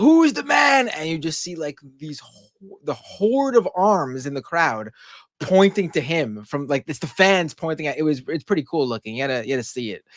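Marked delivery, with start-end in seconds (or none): 0.0-0.9 very high, very loud, excited screaming. Describing a clip of him coming down the entranceway, imitating someone screaming. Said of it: "he's screaming like".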